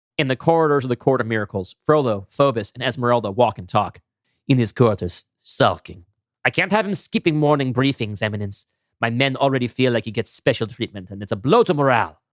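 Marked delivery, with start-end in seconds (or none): 4.5-12.1 bad, weak, unconvincing put-on French accent. Voicing a character reporting to his Eminence during the scene, bad French accent. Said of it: "My French accent is not very good".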